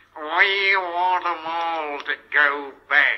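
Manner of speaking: nasty whiny voice. Retelling a voice heard from behind a partition, mimicking a nasty little whine. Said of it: "a nasty little whining voice was heard saying".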